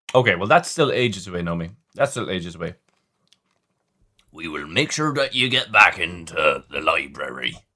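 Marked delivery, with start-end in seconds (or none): 4.3-7.5 full-on storybook character voice, deep and dropped low. Answering a viewer who finishes in June: Hagrid impression. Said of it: "I've never at-, attempted a Hagrid before".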